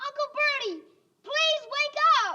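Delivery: shrill, very high, loud shout. Told by the director to shout it, [name] calls to Uncle Bertie, shouting. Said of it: "shout it, [name]".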